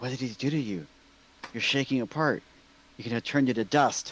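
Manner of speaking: eerie, close-in, ghostly stage whisper, breathy and taunting. Playing a ghost scaring an enemy in a game: whisper in his ear. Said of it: "going to whisper in his ear".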